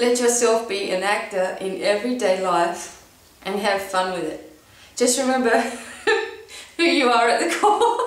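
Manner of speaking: reading with laughter breaking through. Speaker reads a passage aloud, laughing at themself; laughing while reading. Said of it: "I'm laughing at myself".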